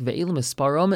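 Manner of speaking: usual speaking voice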